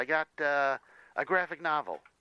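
high, excited. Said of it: "You sound really excited about it".

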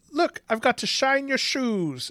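put-on high-pitched, clumsy, failed Irish accent. Mocking a man who was supposed to be doing Irish, in a failed Irish accent. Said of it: "he could not do a fucking Irish accent".

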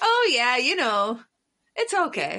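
approachable, reassuring, sweet, friendly Midwest accent. Showing how her midwest comes out when trying to seem sweet: sweet midwestern accent. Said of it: "When my Midwest comes out when I'm trying to, like, seem sweet and approachable".

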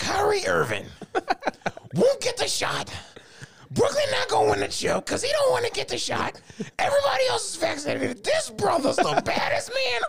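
very high, slow, swooping, drawn-out yell. Doing a best impression of Stephen A yelling about Kyrie Irving: Stephen A Smith impression. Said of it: "I'm finna do my best Stephen A right now".

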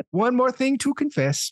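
sad, self-pitying put-on voice, pitched high. Ending a bit about the confessional line in a sad Adam Sandler voice. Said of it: "I kind of said that in a sad Adam Sandler voice".

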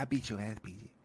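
hushed, menacing half-whisper under the breath. Retelling how someone threatened a friend: imitating a half-whispered threat. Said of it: "threaten, like, from a whisper".

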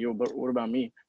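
imitated heavy Colombian accent. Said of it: "a really strong accent".

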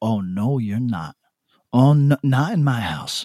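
put-on slow, serious motherly voice, Haitian Bronx accent. Telling how they scold their dog, the speaker acts as a Haitian mother from the Bronx. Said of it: "You turned into a fucking Haitian mother from the Bronx".

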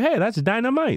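put-on Middle Eastern accent, pitched very high. Quoting what he said, doing a Middle Eastern accent. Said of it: "I don't know why he sounded Middle Eastern".

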